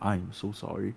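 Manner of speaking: mock-pitying, mock-sorry tone. Retelling how a man apologized and closed the door, retelling a pitying apology. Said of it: "He's like".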